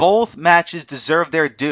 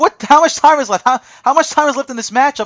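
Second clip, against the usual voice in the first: put-on, high, frantic, freaked-out screaming; 9 semitones higher, 4 dB louder than usual. Retelling watching the match's final minutes: retelling his own screaming. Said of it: "I'm screaming".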